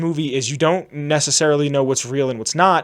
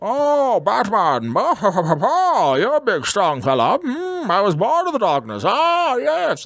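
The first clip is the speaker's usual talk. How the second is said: slow, swooping garbled voice, you're swooped and dragged out; 7 semitones higher than usual. Mocking the third Batman movie, hard-to-understand Bane voice. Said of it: "and then Bane's just going".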